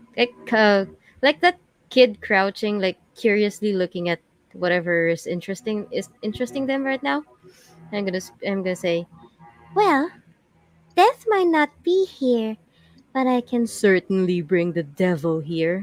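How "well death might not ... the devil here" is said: sinister, changed demonic devil voice. Voicing a character who threatens to bring the devil: changed demonic voice. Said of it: "I'm gonna change my voice".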